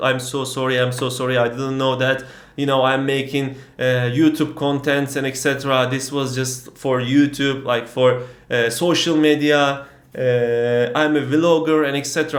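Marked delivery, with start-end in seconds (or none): none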